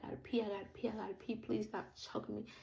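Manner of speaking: put-on strained, breathless begging. Telling listeners about being choked, retelling a breathless plea. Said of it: "I could barely breathe".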